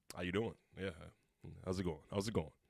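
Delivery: very low, very quiet, casual voice.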